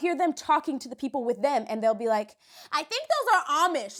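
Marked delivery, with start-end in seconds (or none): 2.7-4.0 loud, raised-pitch voice. Retelling what passersby say on the street: imitating someone talking loudly. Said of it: "like, all loud".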